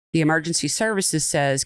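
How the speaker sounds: ordinary talk, nothing marked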